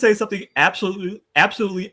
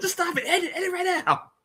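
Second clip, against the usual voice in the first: put-on panicked commentator yell, higher and quieter; 13 semitones higher, 6 dB quieter than usual. Retelling a wrestling commentator's panicked call: imitating Bobby Heenan panicking. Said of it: "you can hear Heenan say".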